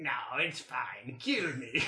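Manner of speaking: best-effort low, soft animal badger voice. A player sends a message cantrip in a badger voice. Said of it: "I try my best to do a badger voice".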